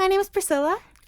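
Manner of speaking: very high, fake polite customer-service voice. Retelling talking to a man's coworker: fake customer service voice. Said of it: "What kind of voice is that?".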